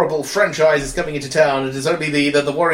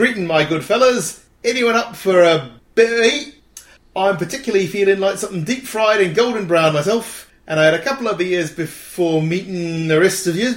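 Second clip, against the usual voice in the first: really bad fake put-on Cockney accent; 4 semitones higher than usual. Reading out an American-to-Cockney translator's result, really bad Cockney accent. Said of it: "some really bad Cockney".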